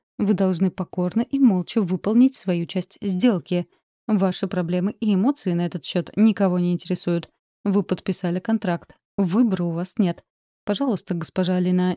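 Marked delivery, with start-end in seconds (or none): none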